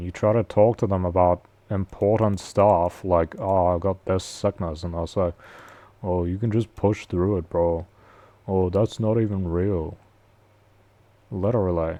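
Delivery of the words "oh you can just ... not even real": mocking put-on male accent, dumb-sounding. Mocking how some men reply to talk of sickness: stupid put-on male accent. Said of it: "I'm doing the fucking stupid male accent".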